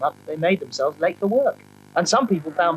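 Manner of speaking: ordinary delivery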